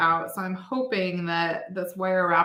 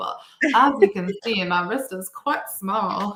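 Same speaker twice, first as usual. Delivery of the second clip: bad, terrible put-on Southern accent; 4 dB louder than usual. Quoting a customer's movie line that teases the speaker's mom, in a terrible Southern accent. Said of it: "I'm doing a terrible Southern accent".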